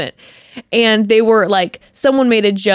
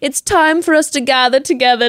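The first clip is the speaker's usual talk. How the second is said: put-on British accent held throughout, pitched up; 5 semitones higher than usual. Retelling how Greg gathered everyone before a rose ceremony: imitating Greg's British accent. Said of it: "talking in the British accent the whole time".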